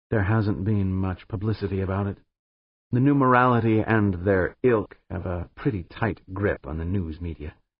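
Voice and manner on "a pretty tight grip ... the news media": ordinary delivery, nothing marked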